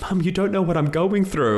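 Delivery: put-on very high, loud crying voice. Retelling his grieving younger self answering his mum about cleaning his room: retelling a crying reply. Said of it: "And I'm crying".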